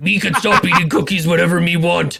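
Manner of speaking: put-on monster voice. Joking with another speaker about eating cookies, in a Cookie Monster voice. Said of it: "Cookie Monster, you gotta calm down".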